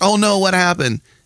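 very high-pitched, feigned innocent surprise and concern. Retelling how a player pretended not to know about his foul: imitating Louis Fernandez's fake innocence. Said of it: "'cause he's always like".

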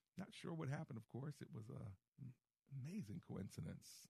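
heavy sarcasm, high and swooping. Speaker comments on Wagner going down in a plane, sarcastic. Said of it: "There's sarcasm in my voice there".

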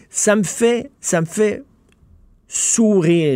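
wry sarcastic aside. Criticizing people who lecture others yet behave badly at home, ironic. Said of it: "Je suis ironique".

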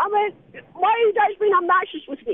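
angry, high, drawn-out shouting yell. Calling back in on the line after saying he wouldn't: yelling. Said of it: "He's actually back on the line right now yelling".

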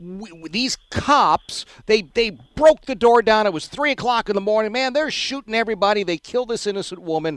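worked-up excited telling. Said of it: "Somebody says".

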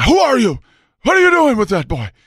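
put-on angry Dutch accent, high, loud, shrill and barked. Retelling two immigrants confronting a youth pastor outside their door, mock-angry Dutch accent. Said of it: "they both spoke with a Dutch accent".

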